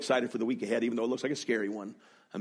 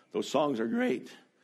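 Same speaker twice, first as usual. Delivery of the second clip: voice breaking and cracking mid-line; 3 semitones higher than usual. Addressing listeners when the voice gives way mid-sentence, voice cracking. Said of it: "My voice just cracked".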